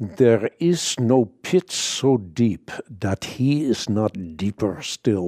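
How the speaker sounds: very slow, deliberate, drawn-out Dutch brogue. Recalling a saying remembered from Corrie ten Boom, in her Dutch accent. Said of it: "with their Dutch brogue".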